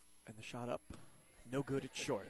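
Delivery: hushed sports commentator impression. Calling a free throw at a basketball game, Golf Channel announcer voice. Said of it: "We have to do the Golf Channel announcers here".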